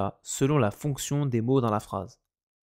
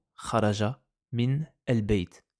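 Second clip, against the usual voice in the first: word by word, a pause after each word. Explaining Arabic vowel linking in French: break between each word. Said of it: "Je suis obligé de lire mot par mot. / je dois faire une coupure pour prononcer".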